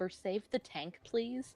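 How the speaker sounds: hushed, whispered aside. Pleading in character for the tank to be saved: whisper. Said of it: "I'm gonna whisper".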